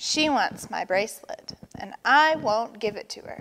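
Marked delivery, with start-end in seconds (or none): none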